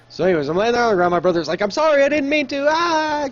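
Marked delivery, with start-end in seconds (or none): 1.6-3.3 put-on crying, very high, slow and tearful. Retelling a brother's apology after an injury: imitating someone crying.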